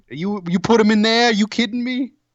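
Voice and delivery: clumsy put-on Boston accent. Asked by the other speaker to repeat the line in a Boston accent, attempted Boston accent. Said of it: "but with a Boston accent".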